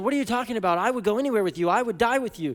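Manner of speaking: urgent, pressing, fast, high-pitched insistent protest. Retelling a scripture scene, acting out Peter's urgency. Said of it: "Do you hear the urgency in Peter's response?".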